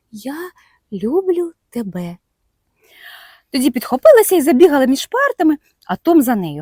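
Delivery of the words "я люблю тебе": bashful, timid, soft half-whispered voice. A girl leans timidly toward him and half-whispers. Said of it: "прошепотіла".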